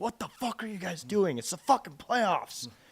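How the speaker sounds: high-pitched, furious, out-of-control yelling outburst. Retelling a coach's timeout rant at a player: imitating a coach freaking out. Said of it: "Just freaking out at him".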